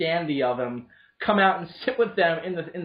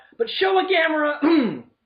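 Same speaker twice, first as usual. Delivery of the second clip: very high voice breaking up, cracking; 11 semitones higher, 4 dB louder than usual. Recommending monster movies to a co-host, voice cracking. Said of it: "my voice is cracking".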